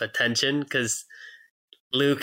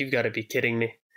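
normal talking voice

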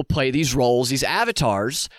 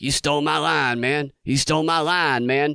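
put-on mumbling voice. Retelling a video where Biden walks into frame: imitating Biden mumbling. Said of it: "he mumbles".

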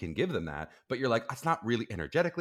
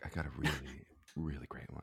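very soft, very quiet half-whisper, barely audible; 8 semitones lower, 10 dB quieter than usual. Teasing another speaker by repeating their line: imitating someone half-whispering. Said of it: "You don't have to whisper it, Chris. You're like".

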